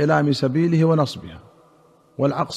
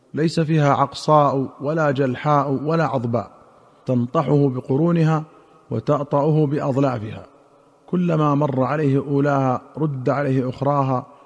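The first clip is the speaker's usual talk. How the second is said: ordinary talk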